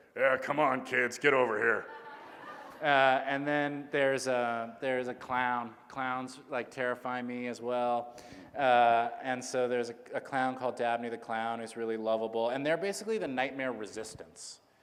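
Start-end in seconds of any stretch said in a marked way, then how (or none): 0.2-1.9 put-on disgruntled tour guide voice. Showing how a book character is meant to talk: disgruntled Mister Meduso voice. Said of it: "He's meant to talk like this".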